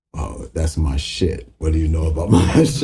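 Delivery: put-on deep, very low bass-register voice. Retelling how a man stopped everything in the studio, imitating a very low voice. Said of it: "you just hear that low ass voice".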